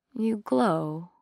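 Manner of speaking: soft, drowsy, half-asleep mumbled words. Narrator reads a character's line, mumbling. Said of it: "she mumbled".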